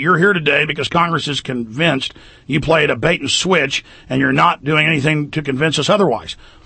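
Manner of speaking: plain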